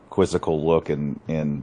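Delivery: ordinary delivery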